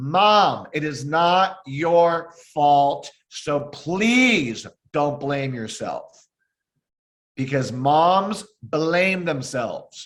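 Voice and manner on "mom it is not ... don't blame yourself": really loud, big, full-voiced, firm insistence. Addressing Mom directly, repeating it: saying it really loud. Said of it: "I'm going to say it really loud".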